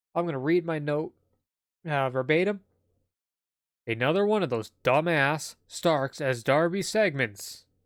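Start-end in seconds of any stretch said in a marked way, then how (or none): 3.9-7.6 put-on newscaster-style news reporter voice. Reading a note verbatim to introduce a segment: put-on news reporter voice. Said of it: "that was one hell of a reporter voice there".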